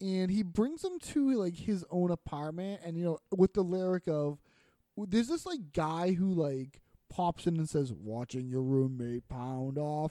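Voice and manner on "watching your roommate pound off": deep, low-pitched put-on voice. Describing a music video where a guy pops in with a line; imitating a deep voice. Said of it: "with, like, a deep voice".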